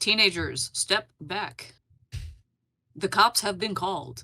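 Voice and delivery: recorded, automated announcement voice. Voicing a sign that warns teenagers the cops are coming: voicing the talking sign's warning. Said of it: "you hear a sound emanate from the sign is like".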